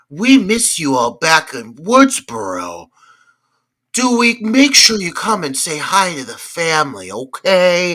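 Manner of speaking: very slow, drawn out over every syllable. Mimicking how the actress takes every line, do a slow Heather Matarazzo impression. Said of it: "she takes it really slow".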